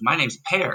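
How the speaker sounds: put-on Swedish accent. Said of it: "With a Swedish accent".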